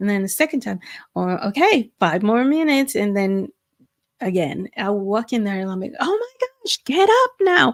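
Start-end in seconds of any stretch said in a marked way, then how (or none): 6.0-7.7 acted-out high-pitched, raised, exasperated scolding scream. A parent retells the daily battle to get her up, retelling a scream. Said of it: "start screaming at her".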